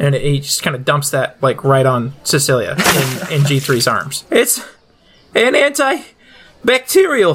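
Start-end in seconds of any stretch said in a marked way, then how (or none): 4.3-7.3 bated breath, much higher pitch, slower. Narrating a game scene, a character dumps antibacterial on a companion, through bated breath. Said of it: "he says, through bated breath".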